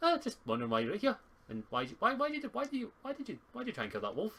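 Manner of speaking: put-on very high pixie voice with Scottish accent. Narrator voicing a female pixie speaking to the players: Scottish pixie voice. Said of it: "She's also a Scottish pixie".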